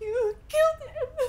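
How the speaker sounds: high-pitched voice, sobbing through every word. A woman confronts someone who broke his promise to stop, sobbing.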